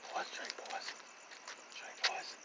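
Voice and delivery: whispering. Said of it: "You're whispering".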